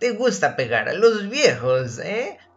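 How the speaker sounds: shrill, screechy, shrieking voice swooping high. Having just been hit, an old man taunts his attacker in a shrill voice. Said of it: "preguntó con voz chillona Irving Goldman".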